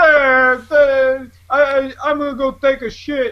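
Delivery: put-on very slow, high, worn-out old-man voice. Imitating the other speaker now that he is married: old-man Joe impression. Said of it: "now you're an old man".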